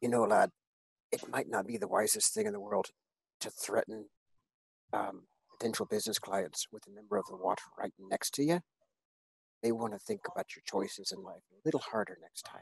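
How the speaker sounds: very quiet, soft, slightly high whisper. Tabletop player leans in close to warn a guy in character, whispering. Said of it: "I'm gonna whisper to him".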